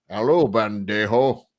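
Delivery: put-on Spanish accent that comes out sounding Scottish. Retelling a movie scene where Sean Connery played a Spaniard, Sean Connery's Scottish-sounding Spanish accent. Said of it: "You sound more Scottish".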